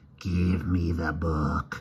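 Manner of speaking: harsh, dry, cracked, insect-like half-whisper. Reading fiction, a voice half-whispers a demand to the narrator: dry cracked insect half-whisper. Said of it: "a dry insect voice, harsh and cracked, whispered".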